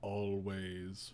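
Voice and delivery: very hushed, soft put-on character voice. Doing his best impression on a single word: Severus Snape voice. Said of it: "Let me do my best Severus Snape impression".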